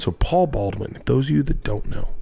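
hushed, quiet whisper. Host introduces a man to those who don't know him: whispering. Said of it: "I don't know why I'm whispering".

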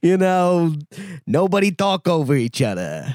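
put-on Italian accent. Quoting what Paul Thomas Anderson once said: Paul Thomas Anderson impression, Italian accent. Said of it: "Nice parachute pull with the accent".

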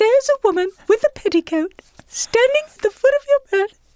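speaking in very high register. Retelling what a South African woman said one night, imitating her really high pitch. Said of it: "she talks like that really high pitch".

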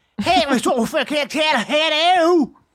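put-on barely intelligible Liverpool Scouse accent, loud and high. Describing an insane accent from liverpool and imitating it: scouse accent. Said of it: "Have you ever heard a Scouse accent?".

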